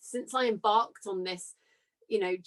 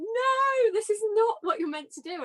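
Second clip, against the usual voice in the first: urgent cry, pitched way up, screamed; 12 semitones higher, 3 dB louder than usual. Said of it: "my soul was screaming at me like".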